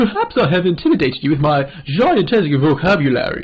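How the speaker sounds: smug character voice. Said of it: "I'm making like a douchebag voice".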